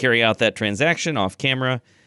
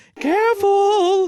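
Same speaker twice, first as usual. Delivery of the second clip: panicked, frightened voice, higher pitched; 4 dB louder than usual. Voicing a talking mirror being hauled up onto a ship, panicked. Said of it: "you can hear a voice saying".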